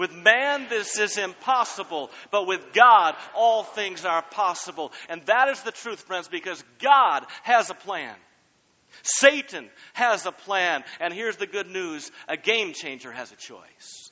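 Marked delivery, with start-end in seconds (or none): 0.0-4.9 loud, forceful, emphatic, meaning every word. Leading listeners to repeat a verse again: loud and forceful, like you mean it. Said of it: "say it like you're gonna blow me over".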